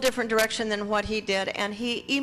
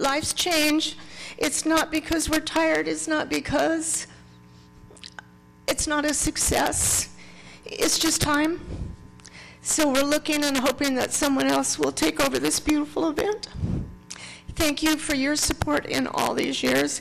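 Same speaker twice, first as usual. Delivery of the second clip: weeping, tearful, crying through the words; 5 semitones higher than usual. Thanking supporters while announcing someone else should take over the event: crying while speaking. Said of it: "I didn't make it through without crying".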